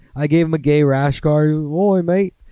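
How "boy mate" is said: higher put-on Australian accent throughout. Retelling a guest's visit, doing an Australian accent. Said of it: "I had to do an Australian accent".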